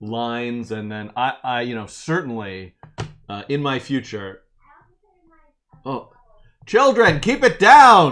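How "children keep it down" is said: loud, slow, shouted delivery. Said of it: "I shouted at, at you".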